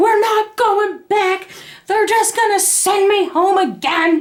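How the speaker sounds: furious shouting. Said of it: "but I'm yelling".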